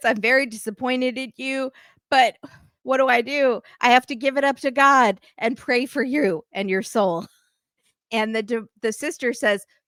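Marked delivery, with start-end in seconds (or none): 0.0-7.3 disappointed words spoken through tears, crying. Retelling a mother's reaction on a TV show: imitating someone crying. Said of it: "starts crying and says".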